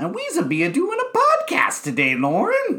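very high, swooping, goofy alien-voice babble. Co-host opening the podcast and addressing Lauren, in a Jar Jar Binks voice. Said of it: "You can't start out by talking like the Binks".

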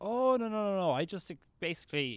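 imitated broken English. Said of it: "in broken, uh, broken English".

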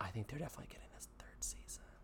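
hushed, very soft, breathy whisper, barely audible. Discussing whether a show will get a third season: whispering. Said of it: "I'm whispering".

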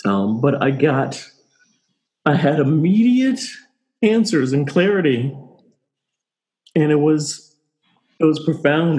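joyful crying, tearful voice. Sharing a personal experience with listeners, crying tears of joy. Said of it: "these are tears of joy".

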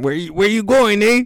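put-on Mexican accent with voice pitched way up. Voicing a coyote asking someone where they are going: put-on Mexican accent. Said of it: "that goes my Mexican".

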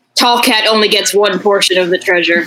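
mock, perfectly deadpan, bone-dry, level, expressionless delivery. Retelling a game session, the speaker quotes a party member, perfectly deadpan. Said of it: "Like perfectly deadpan".

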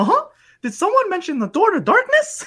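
pitched way up with swooping pitch. Quoting a favorite game line: Mickey Mouse voice. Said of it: "My favorite line is like".

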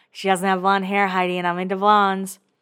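words squeezed out through the teeth. Retelling what Spencer says to Heidi: imitating Spencer talking through a smile. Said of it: "He's talking with that smile".

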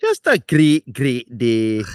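put-on, loud, swooping Scottish accent. Podcast co-host saying a great, great day in a Scottish accent. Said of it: "that's one of my stronger phrases in a Scottish accent".

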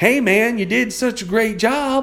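put-on very high, slow, twangy Southern accent. Quoting what Henry from South Carolina would say, in Henry's Southern accent. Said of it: "he would say it like, ... I'm probably butchering his accent, but, you know, he had a little Southern accent".

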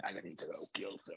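odd, hushed, breathy whispered soldier voice. Recounting a somber game scene that gets ruined, in Marcus Fenix's weird voice. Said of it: "Marcus Fenix's weird voice".

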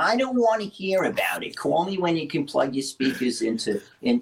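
put-on New York Brooklyn accent. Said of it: "in her famous Brooklyn accent".

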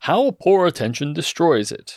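dramatic put-on narrator voice. Speaker narrates a story about Chrissy, in a dramatic narrator voice. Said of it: "I don't know why I'm doing the voice".

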